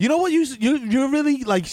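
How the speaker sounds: accusatory delivery. In a scene, confronting someone on a video session; accusatory. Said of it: "you sound like really like accusatory right now".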